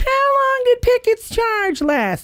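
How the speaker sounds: put-on squeaky, very high little kid pipsqueak voice. Imitating a friend's son as a little boy: imitating Gideon's little pipsqueak voice. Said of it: "with this little pipsqueak voice".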